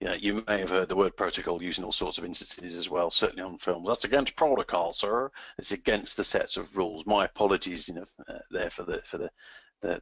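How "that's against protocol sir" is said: mediocre put-on American accent. Quoting a film-style line, in a mediocre American accent. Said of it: "the mediocre American accent".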